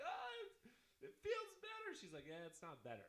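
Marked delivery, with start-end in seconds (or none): 0.0-1.9 very high, loud, raised yelling. Retelling yelling in the gym while everyone looks: retelling own yelling. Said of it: "I'm yelling in the gym everyone's looking at me".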